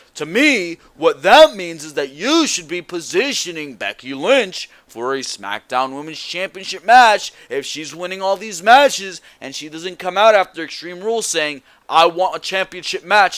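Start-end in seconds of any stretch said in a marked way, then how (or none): 11.9-13.4 slight put-on Irish accent. Imagining Becky Lynch asking for a championship match: Becky Lynch Irish accent. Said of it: "in her little Irish accent".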